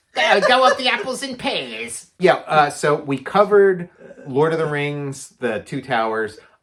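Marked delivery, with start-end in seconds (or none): 0.2-2.1 put-on very high-pitched monster voice with Cockney accent. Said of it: "a Cockney for, for, like, uh, monsters".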